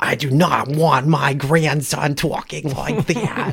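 put-on Boston accent. Retelling a family story, quoting his visiting grandmother in the thickest Boston accent. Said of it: "in the thickest Boston accent".

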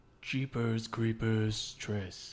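put-on spooky accent. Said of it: "What's with the accent?".

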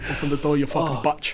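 very low, put-on Scottish accent. Friends act out a scene with E.T.: fake Scottish-sounding accent. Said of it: "why is he Scottish?".

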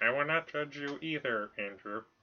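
soft, poorly done robotic synth voice. Replying to the other speaker, bad Stephen Hawking imitation. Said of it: "I was trying to work on my Stephen Hawking imitation".

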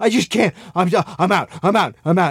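mock panicked man's voice. Retelling how a new hire panicked and quit the show, acting out someone's panic. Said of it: "And he's just in like a panic".

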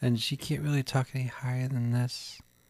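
small, soft, hushed voice. Describing a movie character to another speaker and doing her voice: soft Hook voice. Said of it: "a very soft voice".

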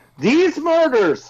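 mock shouting. Reading aloud a message written in all caps: mock shouting. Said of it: "I have to sh-, shout, of course".

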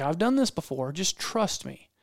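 ordinary talk, nothing marked

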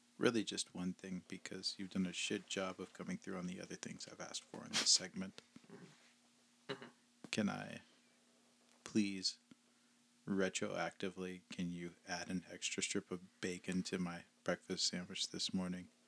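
usual speaking voice

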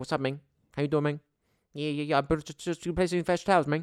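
high, friendly, easygoing chatty tone. Retelling what the bathroom cleaner says when you walk in: imitating the bathroom cleaner. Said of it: "he's like".

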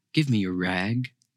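gentle. A rag man speaks to a sobbing woman; gentle. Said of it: "he said so gently".

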